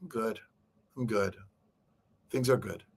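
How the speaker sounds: soft, low, downcast, unconvincing tone. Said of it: "could tell in their tone that things aren't good".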